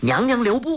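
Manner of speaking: very high, loud, ringing shout. Narrator reads a fisherman calling after Yinggu as she hurries off: shouting. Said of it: "那渔人大呼".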